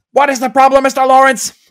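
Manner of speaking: very loud, high shout. Describing a Cobra Kai character, quoting his line while retelling a shout. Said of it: "And he shouts".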